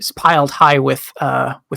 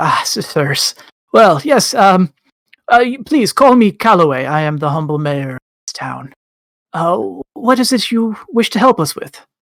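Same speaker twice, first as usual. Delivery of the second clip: stammering badger voice, higher pitch, faster pace; 4 semitones higher than usual. Game master voicing the badger mayor greeting the adventurers: Calloway the badger stammering. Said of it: "the badger stammers out".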